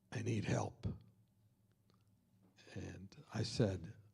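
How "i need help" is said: quieter whispered voice. Retelling a phone call from a brother-in-law: imitating someone whispering. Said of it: "and he's whispering".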